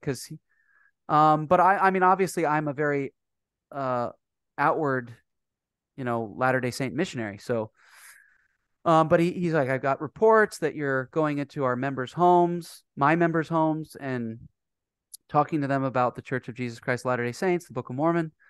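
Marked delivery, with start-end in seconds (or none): none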